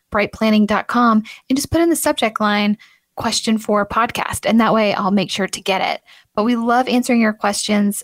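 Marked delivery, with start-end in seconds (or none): none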